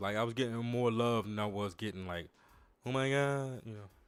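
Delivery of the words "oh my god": over-the-top, exaggerated put-on gushing woman voice.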